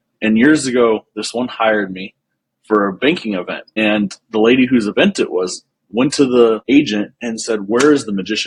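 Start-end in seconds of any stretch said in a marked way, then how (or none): 7.6-8.5 acted angry, indignant, pissed-off tone. Retelling the lady whose event it was demanding the magician: imitating a pissed-off lady. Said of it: "pissed off".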